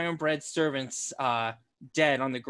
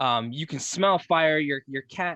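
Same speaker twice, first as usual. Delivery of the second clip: plain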